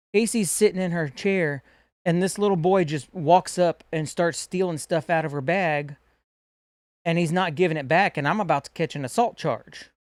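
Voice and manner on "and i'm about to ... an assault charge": ordinary talk, nothing marked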